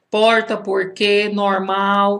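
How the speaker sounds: put-on American-style R sound in Portuguese. A parent mimics how their daughter came home talking, in Portuguese with an American-style R. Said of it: "o americano falando o R, o nosso R. E a minha filha chegou aqui em casa agora falando porta".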